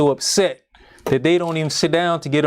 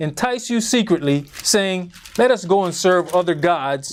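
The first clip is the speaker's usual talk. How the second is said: normal talking voice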